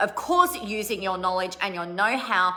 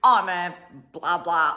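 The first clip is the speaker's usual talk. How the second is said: dry, flat, uninterested monotone deadpan; 3 semitones lower than usual. Showing a reply to someone asking what you do: deadpan. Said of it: "if you kind of make it really deadpan".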